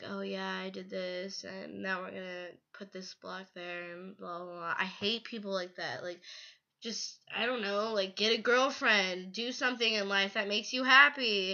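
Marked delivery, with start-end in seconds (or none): 0.1-4.7 put-on monotone narrator voice, much quieter. Complaining about some video commentators, the speaker imitates a monotone narrator. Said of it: "people who are like monotone and they're just like".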